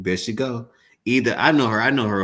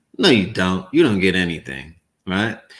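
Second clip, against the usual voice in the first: plain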